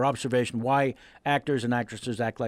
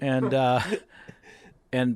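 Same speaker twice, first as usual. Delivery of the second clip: ordinary talk, nothing marked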